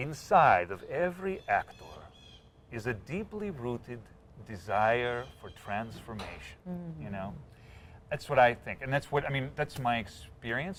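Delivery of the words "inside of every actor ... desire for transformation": put-on slow, deliberate, drawn-out Russian accent. Quoting a favorite saying of Michael Chekhov, Michael Chekhov in Russian accent. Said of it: "he says it in a Russian accent too".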